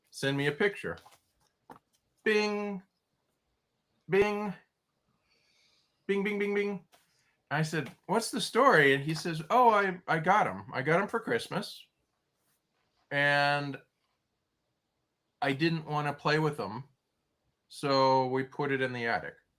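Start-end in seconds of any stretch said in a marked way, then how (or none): 9.5-19.4 completely deadpan, dry, expressionless delivery. Retelling how a man explained his old toys, the speaker repeats his deadpan reply. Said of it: "he said that just completely deadpan".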